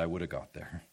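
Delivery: quiet, softly spoken delivery. Speaker quotes Yehuda answering reporters' questions, retelling a quiet reply. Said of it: "he just quietly said".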